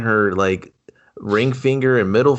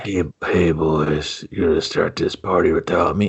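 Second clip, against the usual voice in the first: put-on, strained voice, much lower pitch; 6 semitones lower than usual. Mocking how a game character was made to talk, imitating Tara Reid talking constipated. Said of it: "are they making her talk like she's constipated?".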